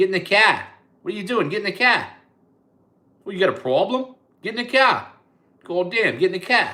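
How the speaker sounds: very loud, very high, put-on Boston accent. Showing how the accent catches on after talking a while, in a Boston accent. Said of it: "and then you get Boston".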